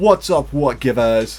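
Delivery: put-on bad British accent. Recalling an earlier podcast episode, the speaker quotes their own line in a bad british accent. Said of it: "I had a British accent, and I was like".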